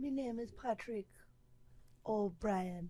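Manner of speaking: put-on Caribbean accent, slow and drawn out. Describing Irish people from a Caribbean island, speaking as them in a Caribbean accent. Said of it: "They all have Caribbean accents".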